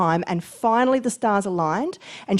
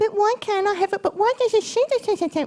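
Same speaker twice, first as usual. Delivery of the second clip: put-on tiny child's very high little girl voice; 12 semitones higher than usual. Speaker describing envy of someone else's good fortune, in a little girl voice. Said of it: "you start doing that little girl voice".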